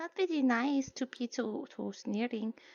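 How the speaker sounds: muttered under the breath. Commenting on a sneering officer so they can't hear, muttered under breath. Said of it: "I say that slightly under my breath".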